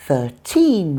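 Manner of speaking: put-on thirteen with stress on second syllable teen. Avoiding confusion between numbers: stress on teen in thirteen. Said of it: "put the stress on teen in the teen numbers".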